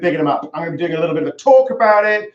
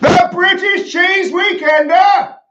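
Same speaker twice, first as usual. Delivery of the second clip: very high-pitched, loud yelled shout; 13 semitones higher, 5 dB louder than usual. Told to say it a bit louder, the speaker repeats the announcement, shouting. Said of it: "I think I've woken my children".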